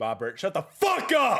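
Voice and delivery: yelling angrily. Breaking off an interview to tell someone to be quiet: yelling at someone. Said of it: "I didn't mean to yell".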